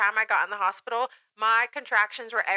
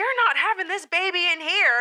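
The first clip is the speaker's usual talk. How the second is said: mock, very high-pitched, commanding shout; 9 semitones higher, 3 dB louder than usual. Retelling being told off in the emergency room: imitating someone yelling. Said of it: "she yells at me".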